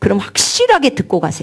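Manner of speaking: 확실하게 stressed with a wide falling tune.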